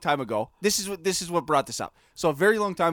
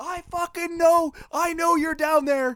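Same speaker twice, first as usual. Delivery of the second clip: mock very high, shrill hollering voice; 11 semitones higher than usual. Telling a childhood story, the speaker acts out a man from his car: retelling a man's yell. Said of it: "But he's yelling".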